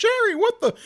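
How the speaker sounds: acted frantic freak-out, very high, very loud shriek. Retelling his mother's reaction to the doghouse fire: imitating mother freaking out. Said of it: "She was freaking out".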